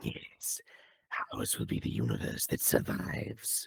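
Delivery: demon voice, whispery and breathy. Redoing a line after the noise gate cut it: demonic voice. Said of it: "more demonic sound".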